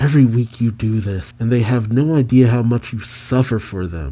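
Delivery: ordinary delivery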